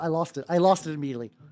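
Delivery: ordinary delivery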